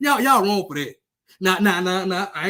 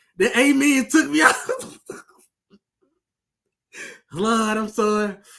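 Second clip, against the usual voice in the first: talking through laughter. Reacting to a team tweeting "Amen" after a blowout, laughing while talking. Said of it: "Forgive me for laughing".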